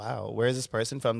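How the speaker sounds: plain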